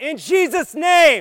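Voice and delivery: very loud, high, punchy, forceful, surging shout. Asking the group to surge more in prayer: even more punch, surging louder. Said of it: "let's surge a little bit more".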